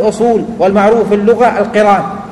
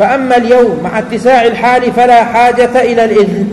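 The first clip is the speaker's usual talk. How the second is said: plain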